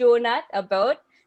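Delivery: playful, exaggerated Canadian accent with drawl. Like a comic showing off the only bit of a foreign accent they can manage, rolling the vowels a bit proudly and too much. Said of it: "somebody with a Minnesota accent talk".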